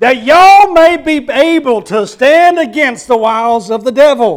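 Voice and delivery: slow Southern accent. The speaker reads a verse aloud with ye as y'all: good southern reading. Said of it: "let me say it like a good Southern person would read it".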